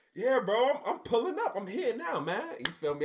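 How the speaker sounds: slight put-on Atlanta accent, pitched very high. Retelling how you faked being on the phone in the next building, a little put-on Atlanta accent. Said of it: "I'm throwing a little Atlanta accent on".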